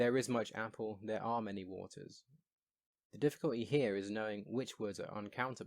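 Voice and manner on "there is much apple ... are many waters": ordinary delivery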